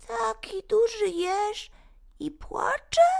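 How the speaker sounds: tiny, thin little voice, very high pitched. Narrator reads a small unseen voice speaking to a crying hedgehog, thin little voice. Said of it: "usłyszał cienki głosik".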